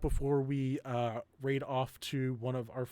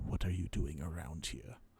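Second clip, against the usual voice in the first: hushed, soft whisper close to the ear; 8 semitones lower, 5 dB quieter than usual. Voicing a figure who whispers into a character's ear: Tooth Fairy whisper. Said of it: "you hear whispered into your ear".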